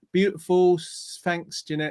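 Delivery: plain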